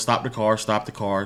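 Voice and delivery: plain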